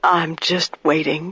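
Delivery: quiet, hushed voice. A waiting woman answers the narrator's question, hushed voice. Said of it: "she says in a hushed voice".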